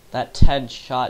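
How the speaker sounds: ordinary delivery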